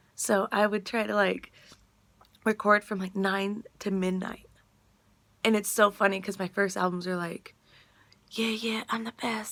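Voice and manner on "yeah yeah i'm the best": put-on whisper. Retelling recording first albums at home at night: imitating own past whisper. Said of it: "whispering 'cause I'm twelve years old".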